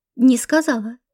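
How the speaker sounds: ordinary delivery, nothing marked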